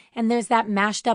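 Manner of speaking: plain reading voice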